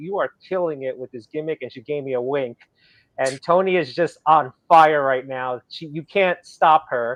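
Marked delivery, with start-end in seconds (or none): 0.0-1.6 hushed, confiding stage whisper under the breath. Retelling congratulating someone met a couple weeks ago: retelling a half-whisper. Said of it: "I congratulated her and I whispered".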